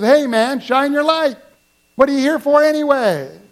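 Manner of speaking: mock, high, half-joking, irritated yell. Telling a story, acting out a mechanic yelling out, retelling an irritated yell. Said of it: "he kind of yells out".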